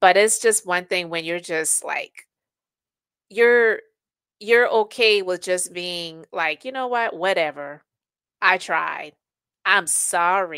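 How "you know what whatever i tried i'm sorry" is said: condescending, patronizing, talking-down tone. Speaker acts out a non-apology someone gives, mock-condescending apology. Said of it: "with that condescending tone".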